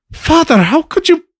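shocked, pleading voice.

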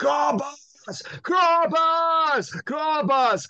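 put-on high yell with thick German accent. Retelling a stranger calling across a Renaissance festival field, retold yell, thick German accent. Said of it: "in this really thick German voice from across the field, I heard somebody yelling".

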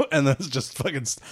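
usual speaking voice

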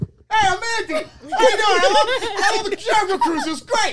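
shrill, ugly-sounding high voice. Retelling how a guest sounded last time she was here: imitating Mandy sounding awful. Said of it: "she sounded like absolute crap".

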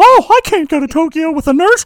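squeaking, high-pitched and loud. Quoting a character modeled on Mickey Mouse, in a Mickey Mouse voice. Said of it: "He modeled his character off of Mickey Mouse".

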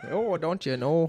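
put-on Minnesota accent. Hosts discuss a man's accent; one imitates it: Minnesota accent. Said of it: "A Minnesotian accent?".

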